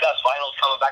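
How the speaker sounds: ordinary delivery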